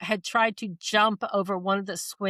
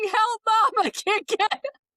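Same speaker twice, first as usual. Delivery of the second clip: slow, drawn-out talking-dog voice; 13 semitones higher than usual. Retelling a story about a stuck, barking dog, voicing the dog. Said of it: "he was saying".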